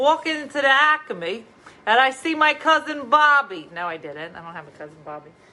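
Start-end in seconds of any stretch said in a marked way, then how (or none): 0.0-3.7 put-on exaggerated New Jersey accent, loud and high. Telling about walking into the acme, showing off a put-on new jersey accent. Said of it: "Listen to how Jersey I am".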